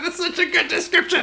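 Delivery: laughing while talking. Reacting to another speaker's description of an image: laughing while talking. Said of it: "I am really giggly today".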